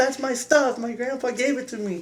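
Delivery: imitated yell. Retelling yelling at dad after he broke a guitar string: imitating own past yelling. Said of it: "I remember yelling at him".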